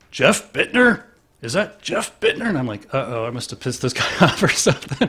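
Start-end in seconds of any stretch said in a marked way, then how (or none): 0.2-2.5 put-on booming voice, much higher, louder. Recalling a man calling his name from behind him, retelling a booming voice. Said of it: "this booming voice in back of me".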